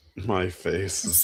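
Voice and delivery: put-on flat deadpan voice. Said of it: "her voice is, like, so fucking deadpan".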